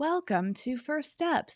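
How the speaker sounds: put-on, professional, kindly robotic announcer voice. Describing the voice that guides you through the controllers, imitating a professional robotic announcer. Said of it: "this really professional".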